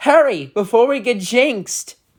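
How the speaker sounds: put-on British accent. Retelling what a little colt unicorn says: British accent. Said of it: "It's like a British accent".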